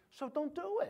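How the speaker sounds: Italian accent, pitched way up. Speaker urging listeners not to do it, in an Italian-sounding accent. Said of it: "I sounded Italian when I did that".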